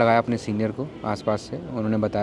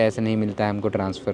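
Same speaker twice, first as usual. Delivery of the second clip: ordinary delivery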